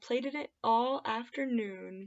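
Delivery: ordinary delivery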